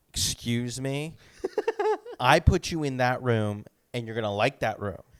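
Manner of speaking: put-on sassy tone full of attitude, swooping pitch. Retelling a man's answer in a dispute over a booked room, imitating a sassy reply.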